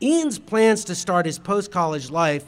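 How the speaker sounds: plain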